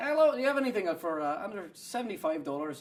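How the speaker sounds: put-on Irish accent. Retelling shopping for a kilt while faking being Scottish, accidental put-on Irish accent. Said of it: "Or oh no, that's Irish".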